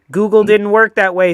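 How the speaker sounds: plain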